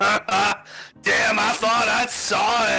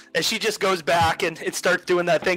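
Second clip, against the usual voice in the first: ordinary talk, nothing marked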